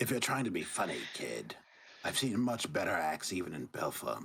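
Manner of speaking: put-on old hag character voice. Voicing the hag looking down at a player: hag character voice. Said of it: "she looks down at you, Tatian".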